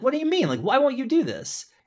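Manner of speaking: play-acted very high, swooping, exasperated outburst. Describing the scene where Mike turns Saul down, acting out Jimmy's exasperation. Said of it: "Jimmy's just like exasperated and like".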